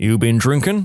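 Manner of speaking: ordinary delivery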